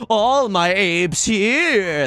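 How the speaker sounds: very slow, loud, sarcastic sing-song cadence. Redoing a joke line about owning apes: sarcastic cadence. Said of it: "I didn't put on the sarcasm cadence".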